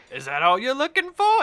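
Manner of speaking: flirtatious teasing, very high and loud. Voicing a character who winks at another character: flirtatious. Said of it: "And she winks at you and then laughs".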